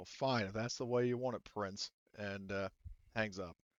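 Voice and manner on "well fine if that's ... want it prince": sour, grudging, bitter, resentful tone. Voicing a character answering Prince before hanging up: bitter. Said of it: "Samson basically bitterly says".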